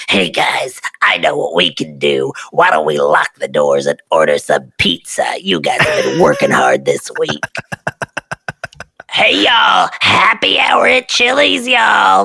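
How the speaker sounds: very low, swooping, try-hard cool voice. Speaker describes a boss who wanted to be the cool boss, wannabe cool boss voice. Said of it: "he had a very similar voice".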